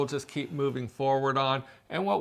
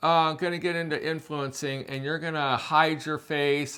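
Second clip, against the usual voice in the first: ordinary talk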